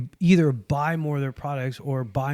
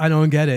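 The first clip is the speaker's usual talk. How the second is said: ordinary delivery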